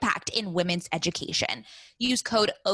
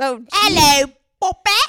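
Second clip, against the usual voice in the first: put-on Cockney accent, higher and louder; 6 semitones higher, 11 dB louder than usual. Showing off impressions to a co-host, doing a Cockney accent. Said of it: "I can do Cockney".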